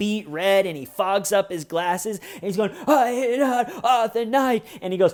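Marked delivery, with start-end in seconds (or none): 2.9-4.7 high, acted blubbering cry with tears and wheezes. Retelling a man's outburst into his oxygen mask, imitating someone crying and wheezing. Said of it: "start crying and spitting and wheezing".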